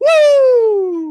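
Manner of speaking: very high, loud, long drawn-out woo, cracking at end. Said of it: "Cracks a little bit at the end there".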